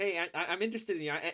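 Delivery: put-on nervous high voice. Describing how nerves change their voice in conversation, imitating own nervous high voice. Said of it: "makes the voice rise up in tone".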